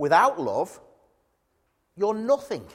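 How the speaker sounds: put-on severe, unimpressed, stern and firm voice. Acting out a reply to people excited about miracles, retelling a stern reply. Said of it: "quite sternly".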